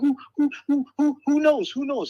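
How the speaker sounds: very high, stammering, owl-like hoots. The speaker retells a woman's struggling reply, imitating Shelly's owl-like hooting. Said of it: "She sounded like an owl".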